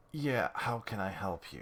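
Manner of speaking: drained, weak, feeble voice. Answering a phone call in a role, in a weak voice. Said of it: "I just want to get like into the weak voice".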